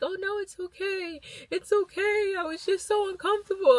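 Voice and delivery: mock crying, very high-pitched and tearful. Retelling apologizing at a man's door while verifying ID, retelling crying while apologizing. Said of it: "And then I'm crying".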